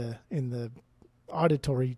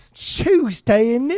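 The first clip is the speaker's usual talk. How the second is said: high, loud, belted mock English accent. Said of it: "it's my English accent coming out".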